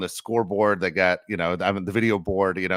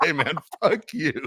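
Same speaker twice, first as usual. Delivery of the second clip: upset, sore, pitched-up voice; 9 semitones higher than usual. Retelling a friend's parting reply as he walks off, mock-upset retort. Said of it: "he walks off all upset".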